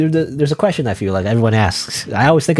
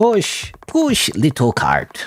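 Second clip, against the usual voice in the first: very slow, drawn-out, swooping bad voice; 4 semitones higher than usual. Describing players struggling to push a cart, doing a bad Heavy impression. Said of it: "that was a horrible impression".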